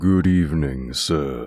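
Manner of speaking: rasping, hoarse, raspy voice. Reading a story aloud, an old man greets the narrator: deep, raspy voice. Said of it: "addressing me in a deep, raspy voice".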